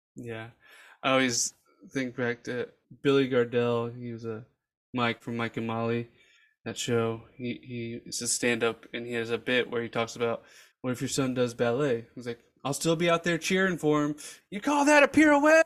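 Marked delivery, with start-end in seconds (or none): 12.6-15.6 high, loud cheering bellow like a stadium crowd. Retell a stand-up bit about a son doing ballet, as Billy Gardell yelling like at football. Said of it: "he's just yelling like he's at a football game".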